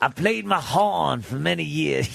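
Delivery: put-on Louisiana accent, man's voice.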